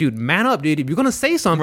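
ordinary delivery

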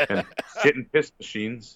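normal talking voice

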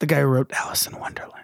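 soft, hushed whispered aside. Explaining a reference to another speaker: whispering. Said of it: "Why did you whisper that?".

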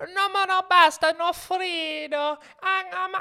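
put-on shrill, loud, high little-girl complaining, "frido" stretched. Imitating a little Italian girl seen on Facebook: imitating a complaining Italian girl. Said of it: "she's just complaining".

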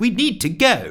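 very high sharp snap. From the doorway, a woman cuts in while someone apologizes to an ape, snapped. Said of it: "snapped Nancy".

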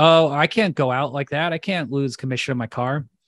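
acted scared, mock-worried delivery. Retelling how a man reacted to hearing his car leaks fluid, acting out someone scared. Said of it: "He's all scared".

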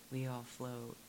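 soft, hushed half-whisper. Retelling what a sister would say at storm drains: imitating a half-whisper. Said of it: "whisper in my ear".

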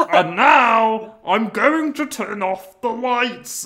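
high, loud, slow, stretched-out comic voice. Acting out a silly horror plot, doing a Mister Bean voice. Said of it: "doing this fucking Mister Bean voice".

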